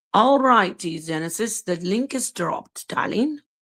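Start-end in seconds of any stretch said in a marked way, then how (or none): 1.7-3.4 put-on South African accent across the line. Telling a listener on stream the link is posted, in a South African accent. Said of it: "This is my South African accent".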